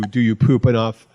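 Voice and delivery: ordinary talk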